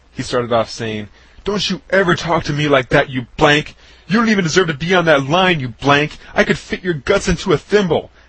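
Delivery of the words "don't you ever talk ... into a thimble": mock enraged yelling tirade, loud and high-pitched. Retelling how a man blew up at him: retelling a furious tirade. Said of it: "This completely set him off".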